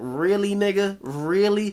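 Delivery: play-acted, very sarcastic, incredulous tone. Retelling own reaction while reading a news story: imitating own sarcastic reaction. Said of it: "the way I sound very sarcastic".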